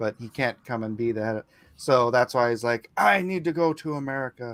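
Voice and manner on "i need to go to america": slow, really bad put-on Japanese accent. Pitching a movie character's line about leaving: really bad Japanese accent. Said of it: "he says it in a really bad Japanese accent".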